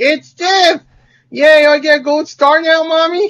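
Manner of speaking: put-on, very high, slow twelve-year-old girl voice. Mocking a quiz answer as an imagined twelve-year-old girl: mock twelve-year-old girl voice. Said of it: "if I was a twelve-year-old girl".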